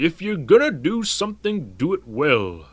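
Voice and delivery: clumsy, badly done grandfather voice. Narrator recalls his grandpa's voice while packing; terrible Grandpa Glendinning impression. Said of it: "that was a terrible Grandpa Glendinning impression".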